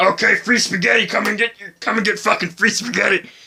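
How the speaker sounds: blunt, abrupt, barked character voice. Retelling how Bowser phoned Mario: imitating Bowser. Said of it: "He just phoned Mario and be like".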